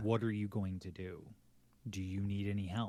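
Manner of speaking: usual speaking voice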